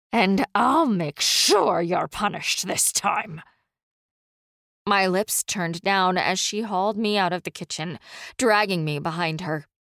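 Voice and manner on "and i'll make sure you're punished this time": spoken in a hiss. A nun towering over the narrator hisses into the narrator's face. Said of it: "she hissed into my face".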